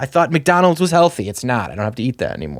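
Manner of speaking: plain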